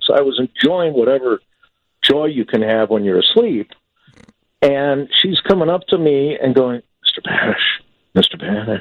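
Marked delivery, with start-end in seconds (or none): 7.0-8.8 put-on soft calling voice, lower and slower. Retelling how she woke them from a deep sleep, imitating a soft call. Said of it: "She comes in real softly".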